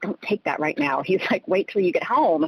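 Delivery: put-on whisper. Retelling what a stepdad said in their ear: imitating a whisper. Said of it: "he kinda whispers in my ear".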